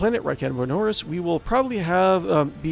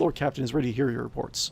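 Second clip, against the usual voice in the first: normal talking voice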